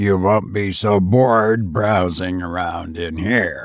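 flat, weary, cold, unsympathetic low monotone. Reading a character's reply to the narrator, in a cold, tired monotone. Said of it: "In that monotonous voice".

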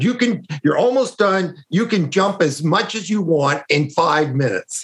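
put-on irritated voice. Retelling what an annoyed tester told a child: imitating an annoyed tester. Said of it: "her voice changes".

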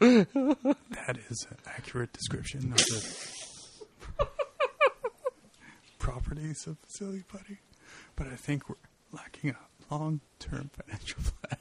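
soft, hushed close-mic radio voice. Hosts doing a comedy bit, speaking quietly right up close to the microphone. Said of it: "people talking quietly into a microphone, like really up close".

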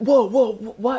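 mock-confused, acted puzzled tone. Retelling how a guy who just woke up reacted, imitating someone acting confused. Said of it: "he's like acting all confused".

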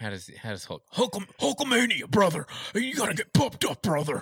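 rough wrestler-style voice. Showing how a Hulk Hogan impression should go, gruff Hulk Hogan impression. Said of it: "he's a gruff man".

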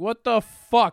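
high, loud, slow, outraged shout. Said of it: "was like".

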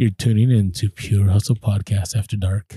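very low late-night FM radio DJ voice. Reading a negotiation book's chapter two, the host demonstrates the late-night FM DJ voice. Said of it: "the late night FM DJ voice".

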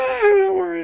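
very high-pitched, laughing, reassuring tone. Retelling her reply when he tried explaining it away, imitating her laughing. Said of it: "she's laughing".

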